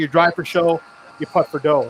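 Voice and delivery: ordinary talk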